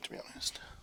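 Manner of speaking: soft unvoiced whisper, said to oneself.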